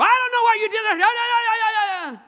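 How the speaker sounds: shrill, very high, drawn-out bickering, "that" stretched. The speaker acts out one church member bickering with another. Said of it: "you hear two church members in each other's hair".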